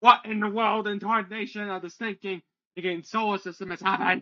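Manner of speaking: very high, shrill, shouting gnome voice. Narrating a gnome who suddenly starts shouting, gnome shouting. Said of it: "This gnome starts shouting, going".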